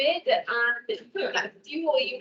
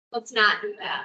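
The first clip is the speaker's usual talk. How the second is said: classic motherly mom voice; 5 semitones lower than usual. Giving exercise instructions, the speaker speaks in a mom voice. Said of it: "It's like such a mom voice".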